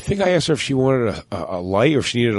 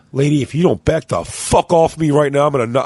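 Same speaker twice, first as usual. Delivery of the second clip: put-on aggressive, threatening tone; 2 semitones higher than usual. Retelling a threat made to a woman on a ship: imitating own aggressive threat. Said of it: "so aggressively".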